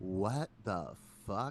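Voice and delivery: slow, drawn-out, stunned disbelief. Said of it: "I'm like".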